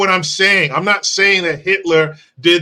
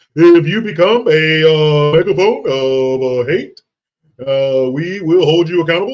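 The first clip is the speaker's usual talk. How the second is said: hesitant, halting on every uh. Reading out a quote the way Obama read it to her, Obama voice. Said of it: "let me do it in, or, in Obama's voice".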